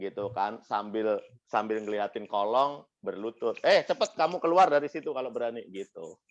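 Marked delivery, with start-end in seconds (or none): none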